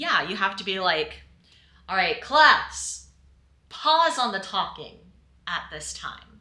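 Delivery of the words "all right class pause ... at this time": commanding, low, projected, carrying voice of authority. Showing how to quiet a talking class: low, projected voice of authority. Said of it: "Lower the voice, project the voice".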